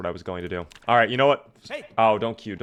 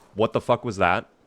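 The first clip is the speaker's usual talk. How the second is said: ordinary talk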